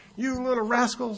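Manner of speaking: high, angry mock yelling. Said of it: "He started screaming at them".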